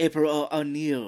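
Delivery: mocking fake Japanese accent. Retelling a movie character's line: imitating a bad Japanese accent. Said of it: "doing kind of a bad ac-, Chinese, Jap-, Japanese accent".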